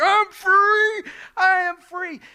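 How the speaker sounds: furious, loud, very high-pitched, very slow speech. Speaker reenacting shouting affirmations while running around the house, retelling loud angry affirmation. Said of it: "affirming the truth very loudly in an angry voice".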